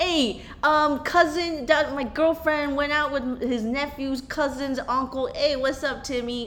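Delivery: put-on Delaware County accent. Joking with a co-host about a TV show, speaker riffs in a Delco accent. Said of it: "That Delco accent".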